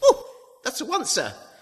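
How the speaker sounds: squeaky high-pitched voice. Recalling what a fervent sister always used to say, high, squeaky voice. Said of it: "she always used to say in a high, squeaky voice".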